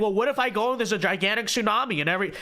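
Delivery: ordinary delivery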